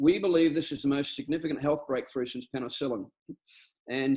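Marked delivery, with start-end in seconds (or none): none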